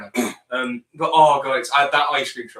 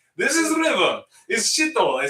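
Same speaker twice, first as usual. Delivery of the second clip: higher-pitched fake Kazakh accent; 9 semitones higher than usual. Recalling a clip of the other person from a trailer shoot, Borat impression. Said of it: "there's a clip of you going like".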